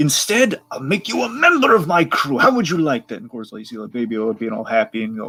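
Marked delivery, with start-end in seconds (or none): 0.0-3.2 soothing, coaxing, high, lilting, sing-song voice. Retelling a scene, voicing Hondo reassuring Baby Yoda: Hondo voice. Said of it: "he reassures Baby Yoda that".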